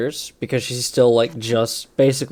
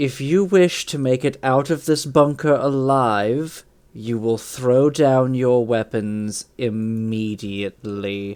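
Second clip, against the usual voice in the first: very calm, cool, collected, slightly drawn out. A player voices Nualia addressing two soldiers, speaking very calmly. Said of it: "she is going to very calmly say".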